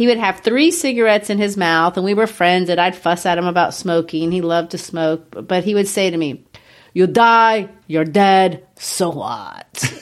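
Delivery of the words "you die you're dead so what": put-on French accent. Retelling a smoker's answer to a friend who fussed about his smoking, imitating a friend's accent. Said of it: "With that accent?".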